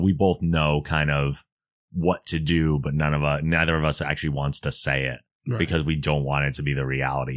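ordinary delivery

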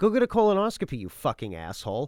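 swooping, screaming outburst. Retelling screaming at a mother to get a colonoscopy: imitating screaming at mother. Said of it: "screaming at my fucking mother".

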